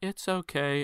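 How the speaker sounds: put-on calm, sweet, sugary, high little-girl voice. Retelling how she answered the speaker's apology, imitating a sweet calm little-girl voice. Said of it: "in like the most like sweetest calm like little girl voice".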